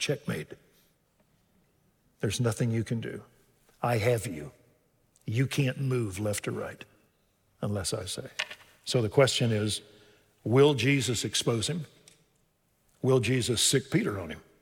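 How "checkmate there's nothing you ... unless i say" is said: whispered. Acting out a quiet word to a betrayer: whispering as Jesus. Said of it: "I think he whispers".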